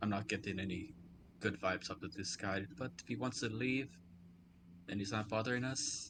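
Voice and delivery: hushed whispered aside. Speaking in character to a companion standing right next to him: whispering. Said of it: "Just whisper to Bolt".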